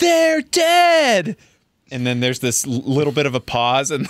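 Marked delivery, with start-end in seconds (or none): 0.0-1.4 mock very high yell, stretching the word "dead". Retelling a movie scene where Anne shouts at her brother: imitating a shout. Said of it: "She shouts at her brother".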